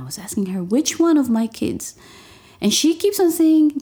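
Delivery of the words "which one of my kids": acted-out frantic screaming through sobs, crying. Retelling own reaction on hearing bad news by phone: retelling own screaming and crying. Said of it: "I started screaming, immediately crying".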